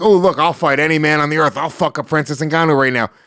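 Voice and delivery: put-on boastful bravado. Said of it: "you sound like the fucking man".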